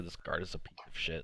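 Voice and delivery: muttered under breath. A player walks away from a guard in the game; muttered under breath. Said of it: "under my breath, I just mutter".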